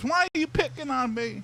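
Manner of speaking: put-on very high, young teenage boy voice. Acting out a kid's reply during a game, in a high-pitched teenage boy voice. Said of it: "that high pitched voice of the teenage boy".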